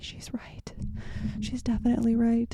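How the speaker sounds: hushed, breathy whisper. Admitting a partner is right while she is in the next room: whispering. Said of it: "so I'm just gonna whisper and say".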